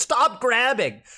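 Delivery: mock high yell. Retelling how a commentator reacted to a player's grabs: imitating Mango yelling. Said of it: "Mango actually started yelling at him".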